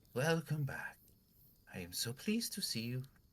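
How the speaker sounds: put-on high-pitched elderly woman voice. Voicing an old lady who approaches another character: old lady voice. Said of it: "Is this the same voice as the other old lady?".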